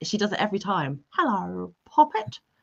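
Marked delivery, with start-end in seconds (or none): 1.1-2.4 put-on little old lady voice with English accent. Speaker teasing Manda about her English accent, imitating Manda's old-lady voice. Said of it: "English accent transformed her into a little old lady".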